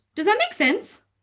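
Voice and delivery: upward pitch lift at the end of sense. Showing someone ending their point with a question, rising at end on 'sense'. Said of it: "we always do it on a high... as we go up at the end, it sounds doubtful".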